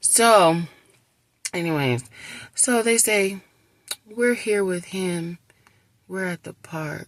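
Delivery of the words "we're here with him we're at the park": put-on very sad little voice. Retelling what they told the speaker during a police matter, imitating the saddest little voice. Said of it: "in the saddest little voice".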